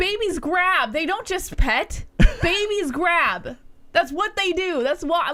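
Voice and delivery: fired-up, heated, insistent outburst. Defending their baby to the other person mid-argument, the speaker is yelling. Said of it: "What are you yelling about?".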